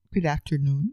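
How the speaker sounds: put-on radio announcer voice. Opening a podcast episode, a host greets listeners in a radio voice. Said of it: "There's that voice again".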